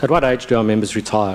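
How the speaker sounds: usual speaking voice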